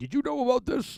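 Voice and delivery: put-on shrill, accusing yell, pitched way up. Retelling a wrestling segment where one man confronts another: imitating Hardy yelling. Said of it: "and then he yelled at him".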